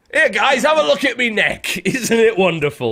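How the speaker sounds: poor northern English bloke voice. Addressing the group as guys, in a horrible northern man voice. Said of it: "I went into my horrible, horrible northern man voice".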